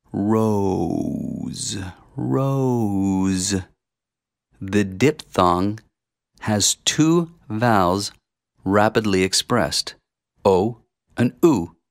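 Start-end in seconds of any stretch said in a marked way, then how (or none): 0.1-3.5 very slow, stretched, drawn-out rising pitch. Demonstrating a word for listeners to repeat, said slowly. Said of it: "say it slowly".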